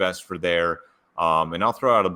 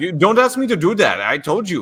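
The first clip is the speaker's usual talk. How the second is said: put-on shrill, swooping, bouncy childlike voice, very high and loud; 11 semitones higher, 6 dB louder than usual. Imitating a driver who refused to give the place back: Max Verstappen impression. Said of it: "I love your Max impression".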